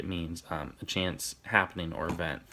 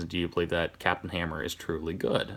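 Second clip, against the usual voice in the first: ordinary talk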